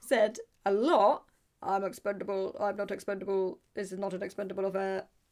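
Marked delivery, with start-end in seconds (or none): 1.6-5.0 stiff, mechanical, flat, level robotic monotone. Quoting a film character in a robotic voice: Arnold Schwarzenegger impression. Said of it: "Great, great Arnie impression".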